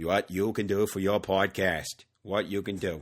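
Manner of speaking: put-on Boston accent. Twisting the ask-what-you-can-do line into a podcast joke: JFK Boston accent. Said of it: "your impression of J F K".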